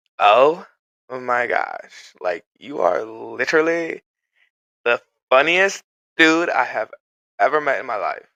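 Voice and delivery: put-on loud, camp, gushing, effusive voice.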